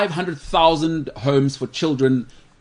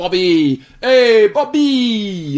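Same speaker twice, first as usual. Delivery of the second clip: put-on loud New York street accent, one word drawn out; 6 semitones higher, 7 dB louder than usual. Speaker giving shout-outs, showing how they talk in New York: New York accent. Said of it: "That's how they talk in New York".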